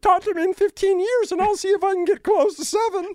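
very high, loud cartoon puppet-frog voice. After being coached on how to do a voice, answering in a Kermit the Frog voice. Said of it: "sounded actually a lot more like Kermit the Frog".

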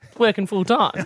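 level, sarcastic smart-arse tone.

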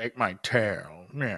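very low-pitched talking-cat voice. Mocking an unapologetic, weird mutant cat, a speaker talks as it: imitating the cat's voice. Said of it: "Is that his voice?".

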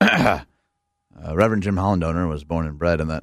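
low, flat robotic monotone with no inflection. Reading friend jim's bio as unfriendly as possible, flat robotic monotone. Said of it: "I'm going to read his bio with no inflection whatsoever... just like a robot is introducing my friend Jim".

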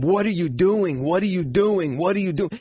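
play-acted angry shouting, held small, mild, repeated. Retelling how the fighter's furious corner was screaming at him: imitating someone screaming. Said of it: "screaming at him".

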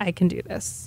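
put-on whisper. Retelling affirmations said aloud to oneself while walking the hall: imitating own whispering. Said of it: "kind of whispering".

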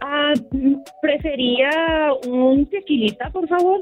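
put-on Mexican Spanish accent. In a bar role-play, answering an offer of a drink, Mexican Spanish accent. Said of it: "That does sound Mexican".

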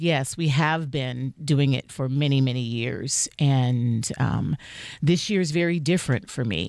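low, grave, dead-serious tone. Retelling your on-air reply to the radio host, retelling a very serious tone. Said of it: "I went in very serious".

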